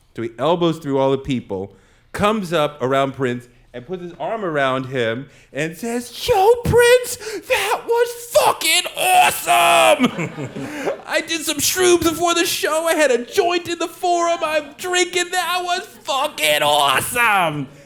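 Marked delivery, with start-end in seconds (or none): 6.3-17.7 jerky, obnoxious put-on Boston accent, pitched way up. Retelling a man who pushed through the crowd to grab prince, in an obnoxious boston accent. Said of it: "Boston accent as asshole-ish as possible".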